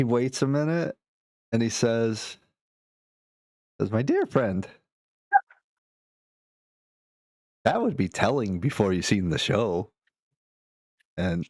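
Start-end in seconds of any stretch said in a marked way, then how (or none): 3.9-9.9 playful, knowing, cheeky sing-song showman's tease. Voicing a fire breather who grins and dodges a player's question: cheeky, teasing tone. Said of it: "throws, like, a cheeky grin your way".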